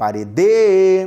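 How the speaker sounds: parede with forced stress on final -de. Portuguese stress trick, forcing the final syllable: stress on last syllable of parede. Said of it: "vamos forçar a última sílaba da palavra parede".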